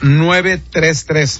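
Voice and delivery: very slow, even, spelled-out readout of digits.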